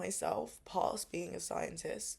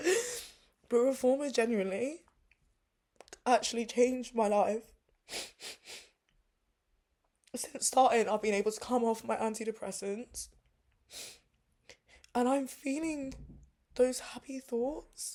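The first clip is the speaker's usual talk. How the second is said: crying while talking, high and raised; 5 semitones higher, 6 dB louder than usual. Speaking to a camera for viewers, crying while talking. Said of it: "I never thought I'd be sat here crying".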